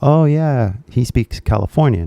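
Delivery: ordinary talk, nothing marked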